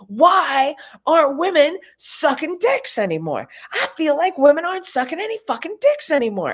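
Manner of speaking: high, raging, angry scream. Retelling a man near her at rush hour in New York; imitating a man screaming. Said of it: "he starts screaming".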